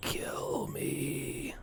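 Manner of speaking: faint, barely-there, barely audible whisper. Voicing a creature's telepathic message to a player: very faint voice. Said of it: "very faintly, like, you can barely hear".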